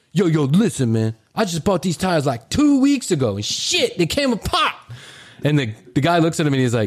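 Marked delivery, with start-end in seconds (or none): 0.1-4.7 put-on slangy street talk in a kid's voice.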